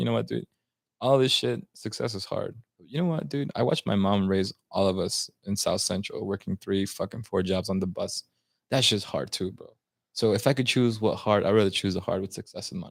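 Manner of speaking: ordinary talk, nothing marked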